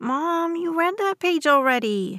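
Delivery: put-on high, whiny, whining child's voice. Narrator voices a son speaking to his mother: whiny voice. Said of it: "Andrew's voice is whiny".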